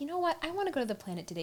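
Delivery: giddy, bubbly, excited. Retelling a TV episode, quoting Jenny: imitating giddy Jenny. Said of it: "She's all giddy".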